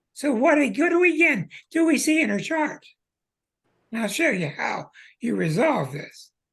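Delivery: croaky frog voice. Explaining a birth chart with asthma medicine in their throat, the speaker talks in a croaky frog-like voice. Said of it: "that's why I'm talking like a frog".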